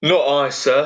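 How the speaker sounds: put-on modest Essex-accented voice. Voicing Loki answering Odin in a group story reading, Essex accent as Loki. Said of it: "do your Essex voice for Loki".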